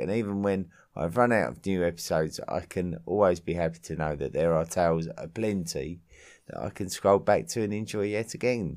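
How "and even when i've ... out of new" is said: usual speaking voice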